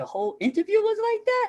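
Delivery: put-on very high, squeaky little-kid voice.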